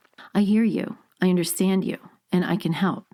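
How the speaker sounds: low, unsmiling reassuring tone with no smile in the voice. Demonstrating how the same phrase sounds when not smiling, speaking without a smile. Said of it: "If I'm not smiling, this is what it sounds like".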